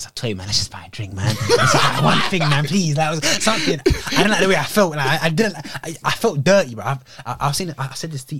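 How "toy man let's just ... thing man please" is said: mock earnest begging plea. Retelling asking a friend to order something: retelling own pleading. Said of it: "it begins with me being, pleading".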